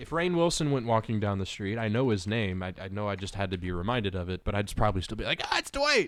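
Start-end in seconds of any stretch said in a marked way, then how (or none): 5.4-6.1 acted-out very high shout. Acting out spotting someone on the street: acting out yelling a name. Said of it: "You're yelling the character's name".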